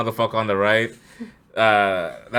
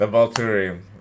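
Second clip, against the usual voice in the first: plain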